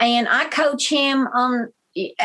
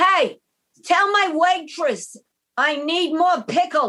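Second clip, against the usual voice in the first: put-on elderly woman voice, calling out loudly; 4 semitones higher than usual.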